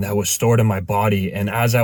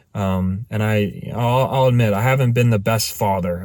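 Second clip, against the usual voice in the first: ordinary delivery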